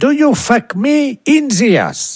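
high, slow, male English accent.

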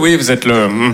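awkward voice, pitched low.

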